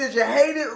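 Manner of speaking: usual speaking voice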